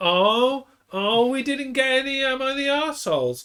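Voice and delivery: very high cartoon character voice. Imagining their future selves reacting, the speaker does a Lisa Simpson voice. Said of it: "Whenever I do that voice, I'm actually trying to sound like um, Lisa Simpson".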